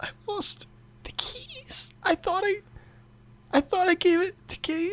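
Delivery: high, hushed whisper. Voicing a nervous character confessing a secret to another: whispering in character. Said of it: "whispers over you".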